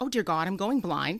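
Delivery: acted panicked, frantic delivery. Patient recounting a doctor examining their dilated eyes, acting out freaking out. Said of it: "I'm sitting there freaking out".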